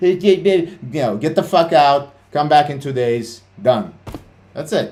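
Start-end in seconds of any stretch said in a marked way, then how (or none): 1.2-3.9 loud, blunt, curt, acted-out bossy barked delivery. Retelling how risk managers order a trader out: imitating a blunt risk manager. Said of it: "no, uh, mushy-meshy political correctness".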